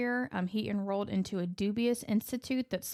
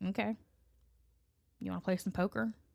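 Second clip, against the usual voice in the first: put-on nonchalant, unbothered voice; 3 dB quieter than usual. Retelling a mother's reply about her child's death: imitating Mary being super nonchalant. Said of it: "super nonchalant".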